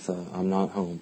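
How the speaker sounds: mock muttering under breath. Recounting a reply to a passport control officer, retelling a mutter under breath. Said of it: "I couldn't help but mutter under my breath".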